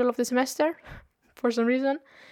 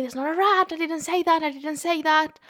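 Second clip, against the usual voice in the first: mild, half-screamed yell; 4 semitones higher than usual. Retelling how the teacher screamed back at the class: imitating a teacher screaming. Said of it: "the teacher was screaming as well".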